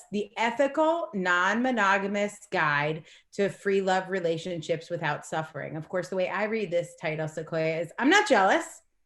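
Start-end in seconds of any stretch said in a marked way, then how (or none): 8.0-8.6 slight edge, raised voice, pitched up. Saying a book title the way the author reads it, a little edge. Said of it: "It's got a little edge in my voice".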